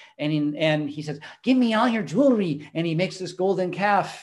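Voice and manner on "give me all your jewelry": put-on rat-like voice, much higher pitch. Speaker retelling a film scene, voicing Aaron in a rat-like voice. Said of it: "kind of rat-like voice".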